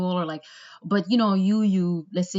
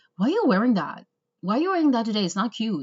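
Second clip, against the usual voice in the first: fast, blunt, abrasive, rude, in-your-face jab; 4 semitones higher than usual. Speaker imitates a rude woman she met criticizing her, in-your-face. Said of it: "She goes in your face".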